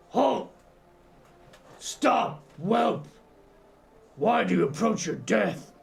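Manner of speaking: guttural shout. Game master voicing a figure crying out in Orcish, guttural cry. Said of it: "immediately a guttural voice cry out".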